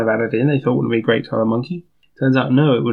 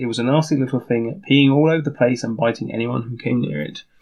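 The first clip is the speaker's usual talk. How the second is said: usual speaking voice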